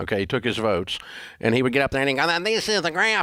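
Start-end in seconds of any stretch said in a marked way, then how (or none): 2.4-3.2 put-on nasal voice, much higher pitch. Recalling Perot's campaign appearances, doing Perot's horrible nasal voice. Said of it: "this horrible nasal voice".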